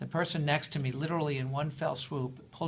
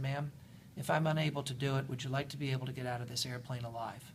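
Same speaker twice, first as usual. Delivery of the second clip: mock deadpan, much quieter; 5 dB quieter than usual. Speaker retells a flight attendant answering an indignant passenger, imitating a deadpan reply. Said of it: "looked at her deadpan and said".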